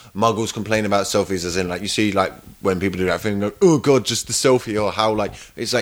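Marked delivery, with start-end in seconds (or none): none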